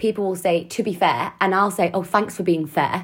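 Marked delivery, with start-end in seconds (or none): 1.9-3.0 acted sarcastic tone. Acting out their habitual reply to people in meetings, retelling a sarcastic remark. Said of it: "And it's like really sarcastic".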